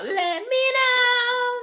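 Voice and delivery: dramatic mock wail, very high and slow.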